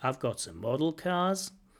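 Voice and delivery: pitch rising at the end on "cars". Talking about accents, giving a sentence with rising intonation at the end. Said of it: "where you could rise towards the end".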